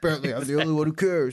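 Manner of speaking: pretend whisper, muttered under breath. Acting out a complaint about cleaning, keeping it from the wife: pretend whisper under breath. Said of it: "I'll whisper under my breath".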